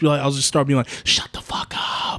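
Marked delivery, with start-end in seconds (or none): 1.0-2.2 slow, hushed whisper under the breath. Telling how they react to someone talking in the theater: imitating own whisper. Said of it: "whispering it".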